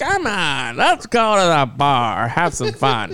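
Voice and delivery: accurate impression, slow and drawn-out. Retelling what Michelle said about going to the bar: imitating Michelle. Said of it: "That's exactly what she sounds like".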